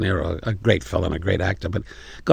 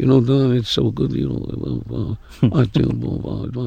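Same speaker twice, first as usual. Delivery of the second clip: high-pitched, halting mumble. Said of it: "I can't work with a mumbler".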